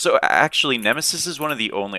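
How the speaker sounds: voice cracking up high at the start. Explaining a game's gods to viewers, voice cracking. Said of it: "I had like a voice crack".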